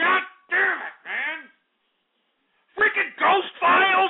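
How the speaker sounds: high, furious yelling rant.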